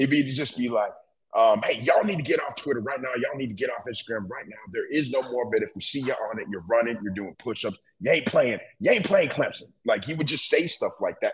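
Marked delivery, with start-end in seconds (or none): 1.6-9.7 put-on yelling, ranting team leader voice. Retelling what Jimbo told the team in meetings, imitating Jimbo screaming. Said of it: "I can hear him screaming now".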